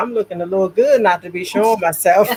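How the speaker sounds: ordinary delivery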